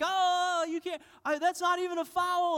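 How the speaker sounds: acted, shrill, loud, very high yell. Retelling a man on the sidelines yelling about a foul: retelling a yell. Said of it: "yelling at him".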